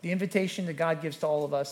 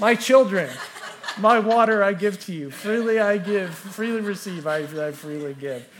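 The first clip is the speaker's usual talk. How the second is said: very loud, booming, slow, grand proclaiming; 4 semitones higher, 9 dB louder than usual. A dad retells announcing to his thirsty kids, in a loud announcing voice. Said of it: "I announced to them in a loud voice".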